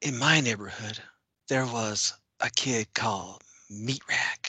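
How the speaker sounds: put-on storyteller voice, soft and whispery. Showing how Pryor narrates, like he's reading a fable: very soft, whispery Pryor narration. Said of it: "narrates this with a very soft, whispery".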